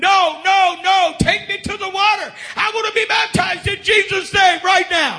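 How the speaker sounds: put-on screaming in a woman's voice. Retelling a woman's words as she ran up: imitating a woman screaming. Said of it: "screaming at the top of her lungs".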